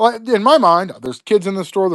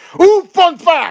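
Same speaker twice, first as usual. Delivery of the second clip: put-on shrill, piping, very high, loud outburst; 11 semitones higher, 5 dB louder than usual. Speaker retelling a man's reply to a request about his sword, retelling a loud exclamation. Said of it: "he says it like that, like real loud".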